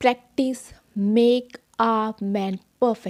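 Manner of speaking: loud, slow, each word clearly enunciated apart. Recalling how she practiced English sentences aloud; each word loud and clear. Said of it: "इस तरह से मैं हर एक word को clearly बोलती थी।".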